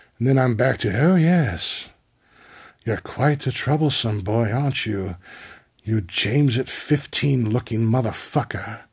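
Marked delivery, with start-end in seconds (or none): 1.1-8.8 thickly pretentious, overdone horror-villain voice. Retelling testing a character voice while walking: James Mason in Salem's Lot voice. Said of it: "like James Mason in Salem's Lot".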